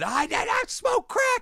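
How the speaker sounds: mock very high, slow, drawn-out shriek. Retelling a denial about a crack-smoking video: imitating someone screaming. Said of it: "he was screaming, face red".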